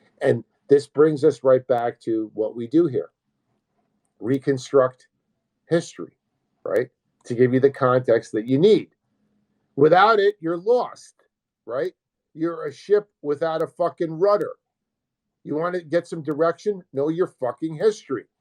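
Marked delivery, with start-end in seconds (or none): 9.8-18.2 frustrated, impatient, agitated, worked-up outburst. A host addressing viewers, agitated. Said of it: "I'm getting a little uh, agitated".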